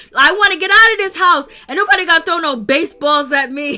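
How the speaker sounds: loud, high-pitched shout.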